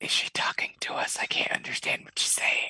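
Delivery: hushed, whispered. During a role-play game, a player whispers an aside to Stony. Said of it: "I'm gonna whisper to Stony and be like".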